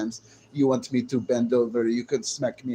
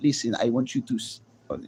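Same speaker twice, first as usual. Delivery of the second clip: put-on Russian accent. Speaker imitates how a russian woman talks, russian accent. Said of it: "the way they talk like this".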